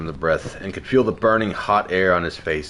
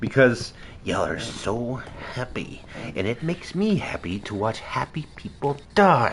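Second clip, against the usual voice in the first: high, raspy evil-spirit voice, rougher with every word; 5 semitones higher than usual. Narrating Kathleen answering Billy while choking him, raspy voice. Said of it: "The voice getting raspier by the second".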